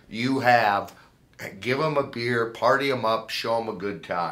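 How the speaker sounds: plain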